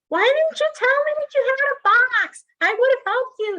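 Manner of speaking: shrill, high, loud yelling. Recounting a woman's reaction to the speaker carrying a box alone: retelling her yelling. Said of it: "Like yelling at me".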